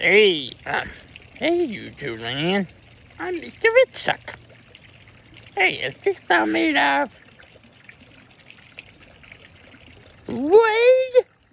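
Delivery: squeaky, swooping cartoon voice, "wood" stretched, bouncing high. Asked to show one of his voices, the speaker performs: Mister Woodchuck voice. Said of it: "can we hear your Mister Woodchuck voice?".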